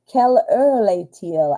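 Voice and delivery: clumsy French with a terrible accent. Saying a French phrase aloud: speaking French with a terrible accent. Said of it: "I'm saying it probably with a terrible accent".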